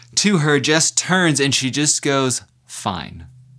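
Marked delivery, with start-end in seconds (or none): 2.7-3.3 mock grudging, defeated, reluctant tone. Quoting Jess finally answering after a persistent rhetorical barrage: mock-reluctant, defeated 'fine'. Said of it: "I don't know if you heard the tone there. It's not like a winsome moment".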